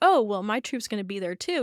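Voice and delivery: plain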